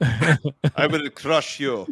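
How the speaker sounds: put-on very slow, drawn-out Russian accent. Trading accents on the show, Drago impression. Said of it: "that was Drago from Rocky".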